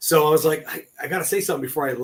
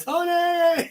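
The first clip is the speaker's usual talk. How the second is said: put-on yell, higher pitch. Retelling the other speaker calling his name: imitating a yell. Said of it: "you yelling".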